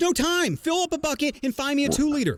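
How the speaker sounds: urgent hurried voice.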